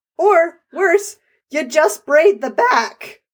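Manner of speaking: voice breaking with anger. Adding to the other speaker's point, voice cracking in anger. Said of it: "my voice cracked there in anger".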